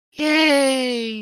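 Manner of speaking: fake very high, drawn-out yay with voice crack. Announcing bad news with a fake cheer with voice crack. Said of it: "Voice crack included".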